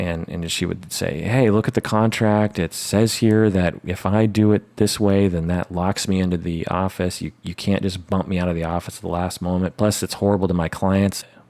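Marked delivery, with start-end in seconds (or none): none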